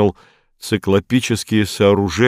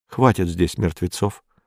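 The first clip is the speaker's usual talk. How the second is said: ordinary delivery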